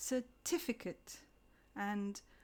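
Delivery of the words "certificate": certificate with stress on second syllable TIF. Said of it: "We stress the second syllable, so we say".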